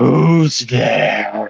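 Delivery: rough, rumbling voice. Voicing someone behind a door answering a knock: rumbling voice. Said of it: "you hear a voice rumble out through the door".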